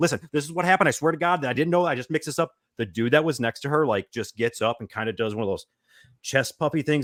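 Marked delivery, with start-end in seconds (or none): 0.0-2.5 high-pitched, rattled off as fast as possible. Retelling a frantic explanation to a stranger, imitating talking very fast. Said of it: "as fast as I can talk, like, almost like this".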